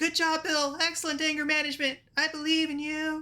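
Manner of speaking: very high, called-out shout. As Bill walks away cursing, the speaker calls after him, shouting as Lulu. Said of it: "Lulu shouts out".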